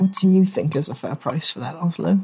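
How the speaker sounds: barely audible, secretive half-whisper. Speaking in character to oslo while others talk, half-whispering very quietly. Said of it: "whisper very quietly".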